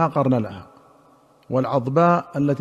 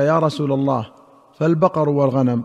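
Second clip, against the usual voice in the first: usual speaking voice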